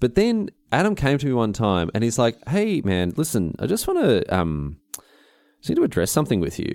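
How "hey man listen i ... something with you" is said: acted, grave, low, very serious tone. Retelling how Adam asked to address something: imitating a very serious tone. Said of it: "very serious".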